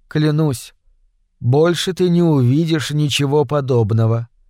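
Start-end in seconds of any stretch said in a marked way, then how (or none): none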